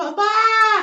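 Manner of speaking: put-on high, loud child's calling voice.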